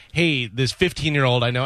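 plain

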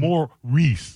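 pitch starts high, then falls away through Maurice. Comparing how names sound, pitch drops on Maurice. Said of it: "You have the Mar up in front, and that's high, and then the Maurice just drops".

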